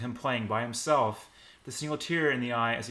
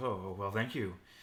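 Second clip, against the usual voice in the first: mock, very suave delivery with slight swagger; 3 semitones lower, 5 dB quieter than usual. Retelling a fan recognizing Adam outside, imitating Adam's suave voice. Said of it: "In a very suave voice".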